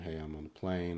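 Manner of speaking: normal talking voice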